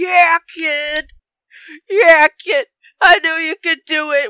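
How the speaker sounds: very loud, very high, booming, drawn-out proud cheer. A tabletop player pictures a character cheering on the kid, imitating El Quijote cheering. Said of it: "You just hear El Quijote going".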